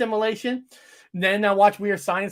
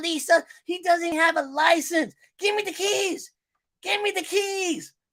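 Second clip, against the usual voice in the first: put-on high-pitched, demanding comedy kid character voice; 9 semitones higher than usual. Retelling a favorite movie scene, doing an impression of a movie character. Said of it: "I don't know if I'm sounding just like him".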